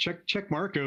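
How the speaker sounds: usual speaking voice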